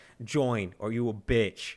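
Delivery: put-on slow, stoic, stony, deadpan Russian accent. Quoting a military video, stoic Russian voice. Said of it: "it's like a stoic Russian voice".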